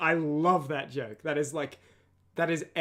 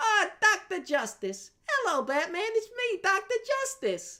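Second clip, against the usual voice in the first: very high, squeaky, swooping character voice. Showing the voice found for the character Doctor Justice. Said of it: "that turned into Doctor Justice".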